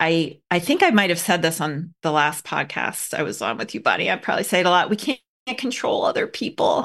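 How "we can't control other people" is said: mournful, downcast, sad, sorrowful voice. Speaker repeating a saying to a buddy on a podcast, in a sad voice. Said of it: "I always say it in a sad voice".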